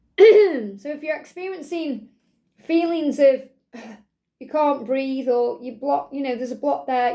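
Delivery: croaky voice that catches. Guiding listeners through feeling a block in the throat: croaky voice. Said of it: "my voice just went really croaky there".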